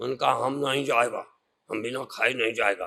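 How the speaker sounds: very low, spooky, scary voice. Retelling a baba being turned away at the gate, retelling in a scary voice. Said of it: "ऐसे डरावनी आवाज में बोले".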